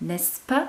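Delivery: rising pitch on the closing pas of n'est-ce pas. French lesson, adding n'est-ce pas after a sentence: rising on n'est-ce pas. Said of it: "my voice is going up at the end".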